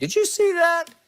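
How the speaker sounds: high, called-out yell.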